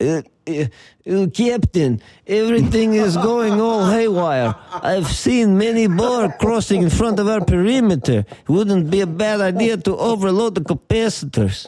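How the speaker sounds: put-on Russian accent. Speaker riffing about Russian listeners, reporting to the Captain in fake Russian Chekhov accent. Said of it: "all you gotta do is talk like that dude from Star Trek".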